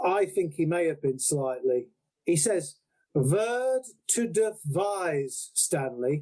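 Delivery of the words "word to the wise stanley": very drawn-out, slow, put-on German accent. Quoting what he says, in a false German accent. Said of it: "he's got this kind of false German accent".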